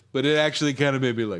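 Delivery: fast, rushed, grudging, reluctant tone.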